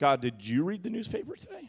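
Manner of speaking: pointed, sarcastic delivery with swooping pitch. Retelling own thoughts while preaching on a hard text: retelling a sarcastic question. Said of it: "you can start to be sarcastic with God".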